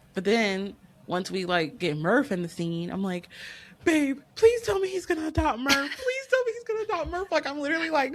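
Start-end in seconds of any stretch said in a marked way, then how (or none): 3.9-7.3 play-acted frantic, freaked-out, very high voice. Retelling watching the movie with babe, retelling own freaked-out pleading. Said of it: "I'm literally, like, freaking out watching it".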